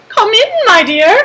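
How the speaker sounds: put-on high-pitched voice. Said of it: "said the wolf in a high voice".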